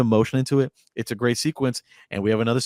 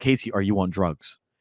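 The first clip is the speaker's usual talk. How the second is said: put-on panicked, fearful voice, lower pitch; 4 semitones lower than usual. Retelling a movie scene where a character pleads with casey: imitating a panicked voice. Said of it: "there's panic in her voice".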